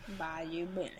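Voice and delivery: put-on Cajun accent. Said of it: "It was a Jace Cajun accent".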